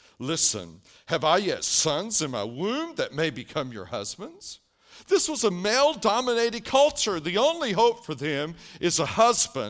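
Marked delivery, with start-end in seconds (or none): 0.2-4.6 put-on bitter, biting sarcasm, swooping pitch. Reading Naomi's reply to her daughters-in-law: Naomi's biting bitter sarcasm. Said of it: "the biting sarcasm of Naomi's bitterness oozes out".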